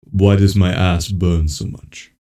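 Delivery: very deep, slow, drawn-out put-on voice. Asked to repeat a complaint, saying it in a Darth Vader voice. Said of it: "say it with my Darth Vader voice? Yes".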